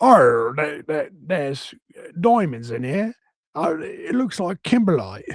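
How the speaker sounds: put-on rural, country Australian accent.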